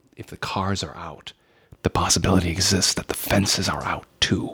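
speaking in a whisper. Whispering in character so Tim cannot hear: whispering. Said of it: "and I whisper to him and I say".

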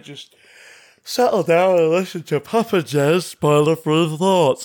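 spoken through a yawn. A host addressing listeners on a spoiler-free show, yawning. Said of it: "I'm yawning".

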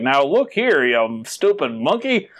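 put-on cartoon professor character voice, lecturing style. Imagining a sketch where a scientist scolds an ape: Professor Frink voice. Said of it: "Professor Frink from The Simpsons".

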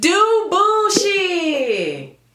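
put-on very high, swooping, loud country-accent holler. Retelling how a woman kept shouting one word: country accent. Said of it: "With her like country accent".

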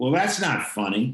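put-on child's voice blurting out, mildly called out. Speaker retells what their twelve-year-old son said on set, imitating a loud kid remark. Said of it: "very loudly says".

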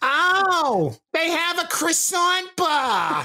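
loud, very high, swooping, sing-song, drawn-out ow. Joking about running into a real-life Fran Drescher: Fran Drescher impression. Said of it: "real life Fran Drescher?".

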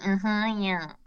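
sarcastic, ironic mm-hmm of agreement. Showing the sarcastic reply given to someone smiling at you: sarcastic "mm-hmm, yeah". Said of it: "that little sarcastic smile".

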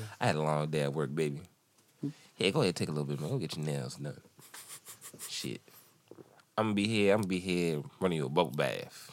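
very low, very hushed, caring, sensitive pimp voice. Playing a pimp apologizing to his baby, in a sensitive pimp voice. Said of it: "just like a pimp who like is really".

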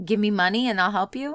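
ordinary talk

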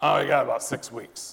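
gravelly rasp in a different timbre.

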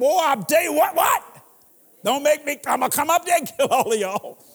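threatening, scolding tone. Acting out a parent threatening kids who won't sleep: imitating a threatening parent. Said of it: "You gotta threaten them".

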